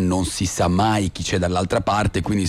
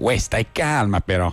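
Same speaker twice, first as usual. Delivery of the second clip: put-on curt, clipped street delivery with a Milanese accent. Describing street quarrels in Milan, quoting someone in a Milanese accent. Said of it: "con l'accento milanese".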